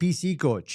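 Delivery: put-on heavily laid-on North Dakota accent. Imitating how people say a term, in an exaggerated Fargo North Dakota accent. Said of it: "they somehow take on this Fargo, North Dakota affect, and they're like".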